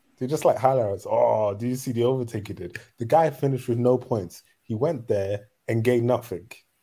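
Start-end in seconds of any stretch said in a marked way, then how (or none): none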